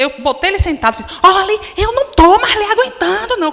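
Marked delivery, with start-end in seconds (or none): 1.2-3.5 put-on furious, loud, rushed angry voice. Retelling how she scolded her misbehaving son, acting out a furious outburst. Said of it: "eu estava furiosa com meu filho... Comecei a gritar".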